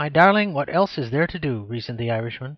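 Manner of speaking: plain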